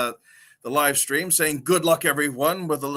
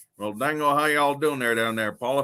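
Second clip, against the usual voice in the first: put-on Texan drawl. Greeting a viewer from Texas: Boomhauer voice. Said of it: "Boomhauer impression".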